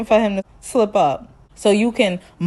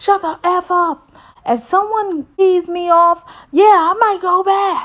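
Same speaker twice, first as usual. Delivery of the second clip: acted out, very high, drawn-out hollering yell; 10 semitones higher than usual. Retelling a reality-show fight, imitating Doug yelling at his sister. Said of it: "Doing all that yelling at his sister".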